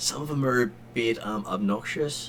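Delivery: hushed whisper under the breath, as an aside. Narrating a scene, the speaker voices a character whispering about the others. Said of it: "he whispers".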